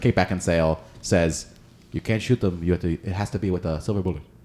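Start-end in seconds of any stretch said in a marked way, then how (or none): 1.9-4.2 put-on Eastern European accent. Recounting a line from the Van Helsing film, bad Kate Beckinsale Eastern European accent. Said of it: "In her terrible Eastern European accent".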